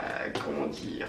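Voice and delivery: voice cracking, breaking, giving out into faint whisper.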